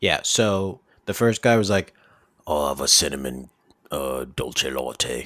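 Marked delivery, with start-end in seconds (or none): 2.5-5.3 put-on British accent, lower pitch. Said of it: "let's do each character ordering a Starbucks".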